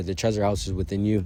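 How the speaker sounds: ordinary delivery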